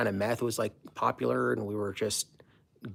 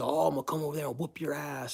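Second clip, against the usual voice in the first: mock-angry, pissed-off tone; 4 semitones higher than usual. Retelling a late call back, the speaker quotes the dude's reply, imitating an angry threat. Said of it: "this dude got all pissed".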